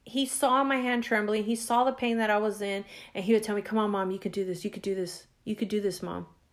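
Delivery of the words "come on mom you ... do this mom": soft, urging half-whisper, repeated over and over. Mother recalls her son Matt encouraging her as they walked, retelling Matt's half-whisper. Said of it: "in a whisper".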